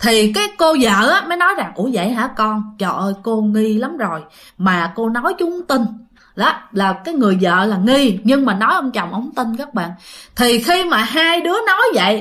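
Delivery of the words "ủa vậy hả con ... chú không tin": usual speaking voice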